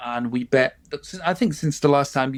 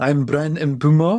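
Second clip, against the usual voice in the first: strong, exaggerated put-on comedy French accent. Showing how to say a name, in an exaggerated comedy french accent. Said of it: "put on the strongest comedy French accent".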